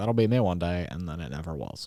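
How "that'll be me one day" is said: normal talking voice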